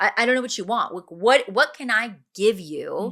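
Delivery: put-on worked-up, heated, angry outburst. Retelling what a woman said in the documentary, imitating her anger. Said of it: "And she just gets all like angry".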